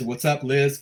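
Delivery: ordinary talk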